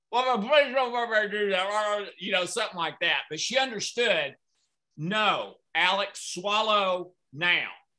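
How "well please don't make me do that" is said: mock speech as if mouth full of food. Retelling a plea made with a mouthful of eggs, imitating talking with mouth full. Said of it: "except I had a mouthful of eggs".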